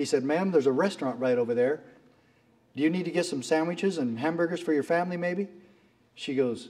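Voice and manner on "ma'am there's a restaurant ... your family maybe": ordinary talk, nothing marked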